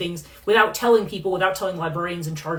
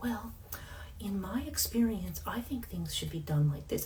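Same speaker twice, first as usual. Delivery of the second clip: put-on hushed, very soft, babyish voice; 13 dB quieter than usual. Describing a person who used to work there, the speaker imitates their baby voice. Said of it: "they would use the baby voice".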